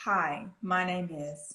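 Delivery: level, flat delivery with no lift. Speaker showing a listener how to minimize their accent: flat voice. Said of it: "Your voice needs to be kind of flat".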